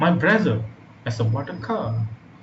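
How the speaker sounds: emphasis hit on the word brother. Demonstrating a stressed word in an example sentence, stress on brother. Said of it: "The stress word here is that is his brother".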